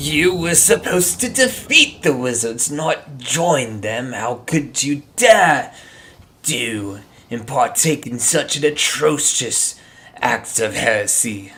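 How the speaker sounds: spooky, scary, menacing villain voice. Speaker performs a character's accusation, scary voice. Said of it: "fun, scary voice".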